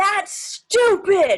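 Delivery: sudden shrill shout at full volume. Retelling how an actor in rehearsal yelled at the director: imitating a man yelling. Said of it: "this man yelled at me".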